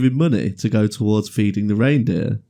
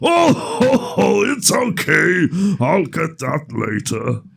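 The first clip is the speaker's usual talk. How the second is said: scary put-on character voice, much slower and higher; 7 semitones higher than usual. Retelling a childhood Santa visit, speaker redoes Santa's reply: Brian Blessed-style scary Santa. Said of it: "That was more Brian Blessed than anything".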